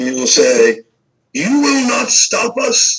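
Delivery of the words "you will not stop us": put-on very high-pitched old man's voice. Voicing an attacker who shouts while firing: old man voice, shouting. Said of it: "kind of like an old man".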